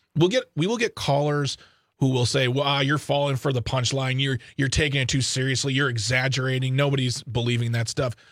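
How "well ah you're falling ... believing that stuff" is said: plain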